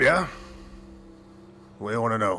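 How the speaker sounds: gruff put-on dwarf voice. A short, stout dwarf walks out from the back to answer: gruff dwarf voice. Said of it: "short, stout uh, dwarf".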